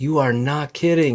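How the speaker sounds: put-on thick Scottish accent. Speaker quoting a man's reaction after many slices of pizza, thick Scottish accent. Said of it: "in his thick Scottish accent".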